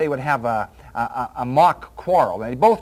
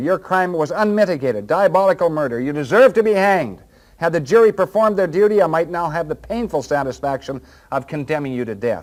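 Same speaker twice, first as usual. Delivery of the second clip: plain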